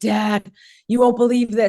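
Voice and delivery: acted-out crying. Retelling a night phone call to dad after the putt, reenacting crying. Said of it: "I'm crying and I'm like".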